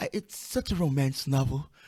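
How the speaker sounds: ordinary talk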